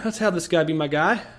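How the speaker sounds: ordinary delivery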